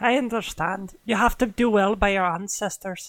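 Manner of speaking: put-on accent gradually sliding into an Irish accent. Voicing a traveling character in a role-play, slipping into an irish accent. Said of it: "I feel like I'm slipping into Irish".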